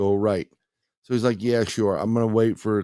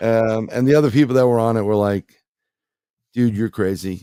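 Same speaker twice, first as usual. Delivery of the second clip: plain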